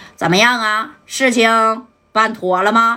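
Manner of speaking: pinched, throat-squeezed, disguised put-on voice. Retelling a scene where a man fears exposing his identity, in a pinched disguised voice. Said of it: "捏着嗓子就说".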